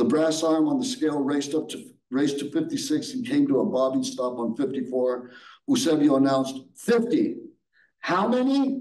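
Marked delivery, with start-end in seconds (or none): 8.0-8.8 incredulous, disbelieving, much higher pitch. Anita questions the weigher right after he announces fifty; incredulous. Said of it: "Anita asked incredulously".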